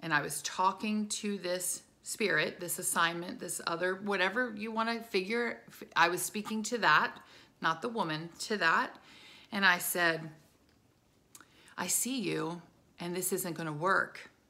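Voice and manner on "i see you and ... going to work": whispered speech. Retelling speaking quietly to a spirit at the back: retelling a whisper. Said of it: "in just a whisper".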